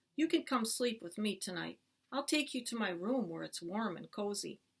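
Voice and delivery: ordinary talk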